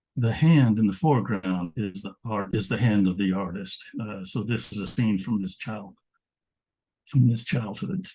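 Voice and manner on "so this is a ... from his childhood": choked-up, emotional voice, catching mid-sentence. Presenting an artist's painting of a scene from his childhood, choked up. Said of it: "I get choked up thinking about these stories".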